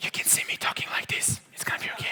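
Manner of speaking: soft, hushed whisper.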